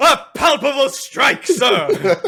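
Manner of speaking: high-pitched, loud, gallant cry. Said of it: "and he just goes".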